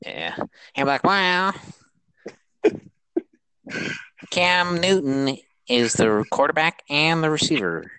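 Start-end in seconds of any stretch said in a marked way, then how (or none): 1.0-7.8 very slow, high put-on kid voice. Joking about how the cousin would react, imitating that Hoover kid's voice. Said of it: "that Hoover kid's freaking voice".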